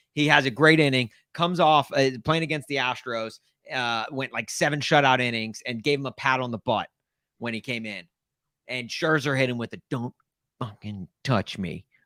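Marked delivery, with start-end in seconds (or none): 9.9-11.8 mumbled, muttered under breath. Retelling what a pitcher said after a pat on the butt, mumbled under his breath. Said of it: "mumbled it under his breath like that".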